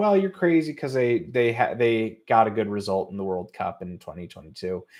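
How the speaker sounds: normal talking voice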